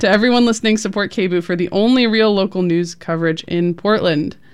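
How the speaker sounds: plain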